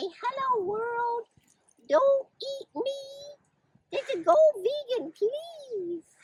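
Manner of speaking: very high, squeaky put-on cow voice. Talking about dairy cows, the speaker gives a cow its own voice. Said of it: "I don't think your voice would sound anything like that".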